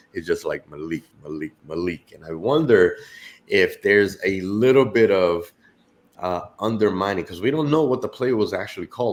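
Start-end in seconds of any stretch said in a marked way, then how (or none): 0.6-2.1 sneaky, hushed murmur under the breath. Describing a player telling a teammate who to throw to, imitating muttering under breath. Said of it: "saying really under his breath".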